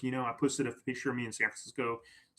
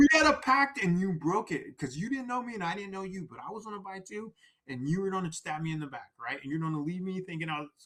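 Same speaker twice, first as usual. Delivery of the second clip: mock, pitched-up scolding lecture; 6 semitones higher than usual. Retelling lecturing a stranger in the crowd who broke a ticket pact, retelling a scolding lecture. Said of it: "I remember lecturing in the crowd".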